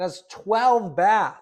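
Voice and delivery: far too loud, high, excited shouting. Going over the details of a listed house, yelling. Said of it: "Sorry, I'm yelling".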